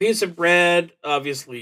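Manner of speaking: plain reading voice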